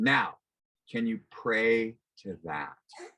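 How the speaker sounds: put-on slow, deliberate, measured voice of God. Retelling what a voice said to them: imitating a big thunderous voice. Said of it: "the big thunderous voice said".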